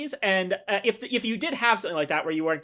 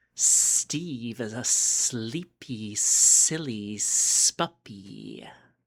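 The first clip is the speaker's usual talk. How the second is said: deep, very low, slow, drawn-out put-on snake hiss; 8 semitones lower than usual. Having to say a line about Steve: hissing snake voice. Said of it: "now I have to talk in my snake voice and say".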